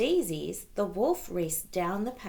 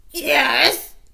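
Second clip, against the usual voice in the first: very loud, squeaky put-on wolf voice; 7 semitones higher, 12 dB louder than usual. Reading a fairy tale, the wolf answering Granny at the door, squeaky voice. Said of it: "squeaked the wolf".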